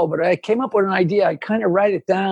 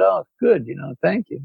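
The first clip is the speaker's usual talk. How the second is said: mock-sheepish, put-on sheepish voice; 2 semitones lower than usual. Storyteller quoting a man's reply when handed something, retelling a sheepish thank-you. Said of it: "he kind of sheepishly said".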